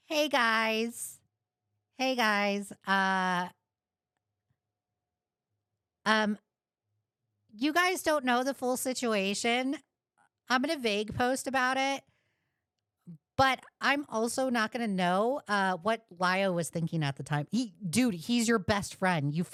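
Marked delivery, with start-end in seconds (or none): 0.1-17.5 scornful, derisive send-up, hedging, full of ums. Mocking the other speaker by acting out his words: mocking imitation of the other speaker. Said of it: "you like to go out here and be like".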